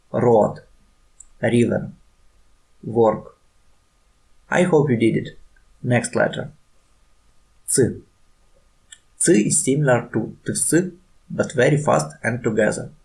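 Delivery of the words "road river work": heavy Russian accent, laid on thick. Showing learners how to read the practice words: strong Russian accent. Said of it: "with strong Russian accent".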